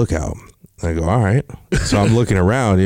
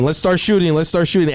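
play-acted, repeated, high, rushed shout; 10 semitones higher than usual. Retelling how a guy jumped out of the trailer during lunch, retelling a yell. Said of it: "starts yelling".

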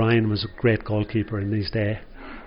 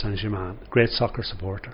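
normal talking voice

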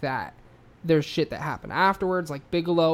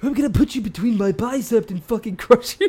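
loud, pitched-up, belted, on-the-edge, about to snap; 6 semitones higher, 6 dB louder than usual. Showing how a deeper voice is forced for the impression: Randy Savage voice. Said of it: "like he's right on the edge".

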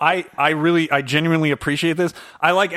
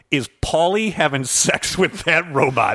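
plain

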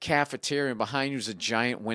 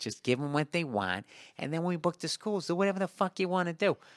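put-on Midwestern accent, pitched up; 6 semitones higher than usual. Retelling advice their agent gave about booking schools, in a Midwest accent. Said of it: "he's Midwest accent".

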